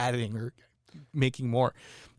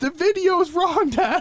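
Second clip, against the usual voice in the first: mock very high, loud, insistent, passionate protest; 5 dB louder than usual. Retelling how a girl argued with her dad about a video, imitating passionate insistence. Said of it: "she was so passionate".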